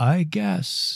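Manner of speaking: put-on thick Swiss accent, laid on. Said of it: "has an incredibly thick Swiss accent".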